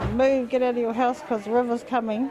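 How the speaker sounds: ordinary delivery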